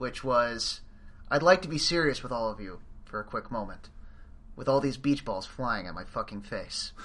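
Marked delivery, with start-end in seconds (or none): none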